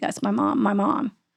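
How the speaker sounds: rough, creaky, labored, struggling to get words out. Retelling a patient's words from a hospital bed: imitating struggling to speak. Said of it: "he's struggling to s-, to speak".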